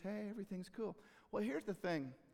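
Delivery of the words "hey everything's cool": gentle, calm, sweet voice. Retelling how an interviewed football player now sounds: imitating Richard Sherman, calm and sweet. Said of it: "he's just calm and sweet".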